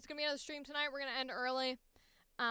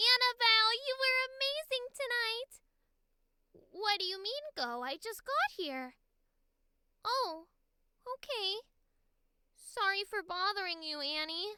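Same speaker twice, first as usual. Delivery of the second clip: put-on high, loud, cheering small child voice; 8 semitones higher, 5 dB louder than usual. Playing a little sister cheering on her big sister, in a little kid voice. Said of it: "Little kid voice".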